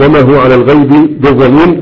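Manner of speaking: ordinary talk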